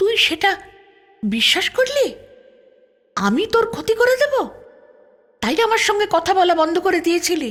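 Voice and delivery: astonished and incredulous. A woman questions the girl who stopped talking to her, disbelief and astonishment. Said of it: "অবিশ্বাস আর বিস্ময় নিয়ে হাঁ করে তাকিয়ে থাকে".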